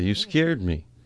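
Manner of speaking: ordinary delivery, nothing marked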